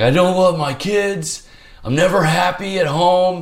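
tearful, very high, slow sobbing. Retelling confessing to a psych, imitating own past sobbing. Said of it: "I'm just like sobbing".

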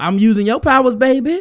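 slick, smooth-talking pimp voice, loud and high. Retelling what a guy said to a girl, imitating a pimp. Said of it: "he sounded like a pimp".

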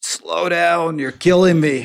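put-on yelling.

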